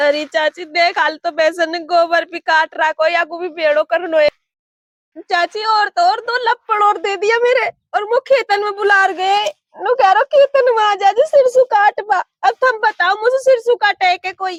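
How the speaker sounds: weeping, tearful, crying complaint. Speaking to an aunt, who asks why she is crying; crying while complaining. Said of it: "जो तू इसी रो रही है".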